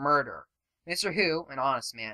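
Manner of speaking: ordinary delivery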